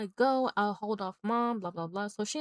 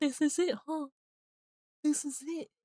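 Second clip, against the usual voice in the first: mock crying, high, slow and tearful; 6 semitones higher than usual. Retelling a movie scene where she opens the window: imitating someone crying.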